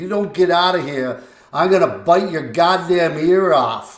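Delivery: put-on Boston accent throughout. Retell the threat made to Barry Beck during the warm up, in Mike Breen's Boston accent. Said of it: "in his Boston accent".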